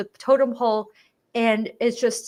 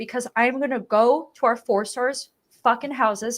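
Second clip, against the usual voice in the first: ordinary delivery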